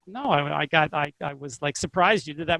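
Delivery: normal talking voice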